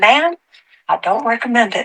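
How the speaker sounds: imitated Southern accent. Retelling what a young man said to her: imitating a southern accent. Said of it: "He has a southern accent".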